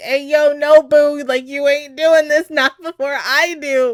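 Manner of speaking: high-pitched, very loud, belted outburst. Acting out a character stopping another from a murder: imitating Aqua. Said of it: "And Aqua's over here like".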